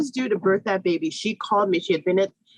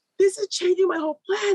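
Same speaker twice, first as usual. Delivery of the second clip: put-on bawling sobs, higher; 11 semitones higher than usual. Retelling own reaction to the doula's news, imitating own bawling. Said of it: "so I start bawling".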